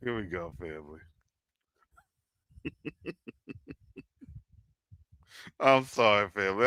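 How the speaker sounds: low, soft voice, chuckling between the words. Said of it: "I'm laughing".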